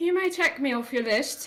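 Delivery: haughty tone, said high and loud.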